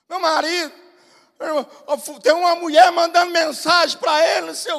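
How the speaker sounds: put-on sobbing through the words, tearful. Retelling a church sister telling the pastor about her husband: imitating a woman crying. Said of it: "e chorando".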